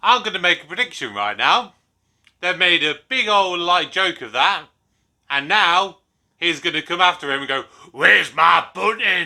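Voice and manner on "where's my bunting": loud, very poor put-on Scottish accent. Predicting what a man will say after being made a joke of, in a very poor fake scottish accent. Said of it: "very poor Scottish imitation accent".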